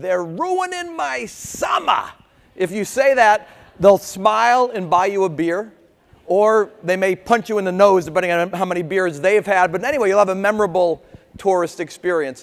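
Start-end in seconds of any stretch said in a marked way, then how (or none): 0.0-2.0 slow, drawn-out Boston accent, pitched up. Showing tourists what to say to someone in a Red Sox cap, Boston accent. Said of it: "in your best Boston accent".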